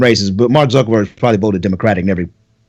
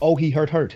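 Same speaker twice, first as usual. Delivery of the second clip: soft, pitched-up, acted-out performed reading; 6 semitones higher, 7 dB quieter than usual. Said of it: "You didn't read it like".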